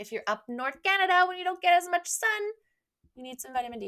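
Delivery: very high, loud, odd, weird put-on voice. Explaining who supplements are for, slipping into a weird funny voice. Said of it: "that was a really weird voice".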